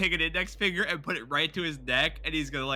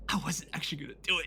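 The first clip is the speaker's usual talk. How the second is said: whispering; 5 dB quieter than usual. A player's character speaks just before Cranberry comes up, whispering. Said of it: "I- I'm whispering the thicket".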